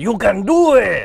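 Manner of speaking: loud, high, slow, drawn-out belted cheer. Showing how a line should be told, in a Rob Schneider voice. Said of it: "in a Rob Schneider voice".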